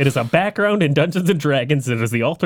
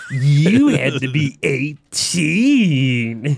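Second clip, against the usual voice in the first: very slow, heavily sarcastic drawl, eighteen drawn out. Quoting a line while comparing two cartoon voices: sarcastic Homer voice. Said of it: "in a very similar tone".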